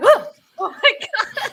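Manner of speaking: high, loud, slow, startled and excited cry. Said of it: "And I'm like".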